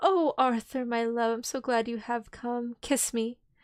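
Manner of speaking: slow, sensual, voluptuous sleepwalking voice. A woman opening her eyes and speaking to a man, soft, voluptuous voice. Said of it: "said in a soft, voluptuous voice".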